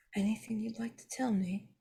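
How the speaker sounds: whispered line. Speaking in character, asking another character a question: whispering. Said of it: "I'm going to whisper to Adi".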